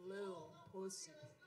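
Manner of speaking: very lowest register, very soft. Showing how the name should be said, in the deepest voice. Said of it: "You have to say it in your deepest voice".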